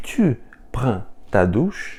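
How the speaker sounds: rising pitch on final word "douche". Teaching informal French questions by intonation alone, rise on "douche" at the end. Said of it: "colocando entonação no final".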